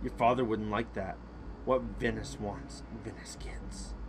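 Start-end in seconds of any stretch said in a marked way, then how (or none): 1.7-3.9 menacing, ominous, quiet sinister voice. Answering someone who says they are leaving, in a sinister voice. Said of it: "I said that so sinisterly".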